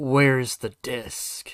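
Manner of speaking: acted-out menacing voice, precisely, carefully enunciated. Retelling a scene where Brooklyn grabs a scientist by the collar: Brooklyn's mock-menacing tone. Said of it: "in this really like menacing".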